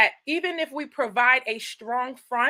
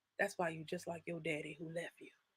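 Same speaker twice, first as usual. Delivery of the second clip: even, calm, very low, quiet, hushed cutting tone; 7 semitones lower, 19 dB quieter than usual. Acting out a woman hitting a low blow: calm voice. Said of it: "hit a low blow in a calm voice".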